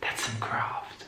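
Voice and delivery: soft, hushed whisper.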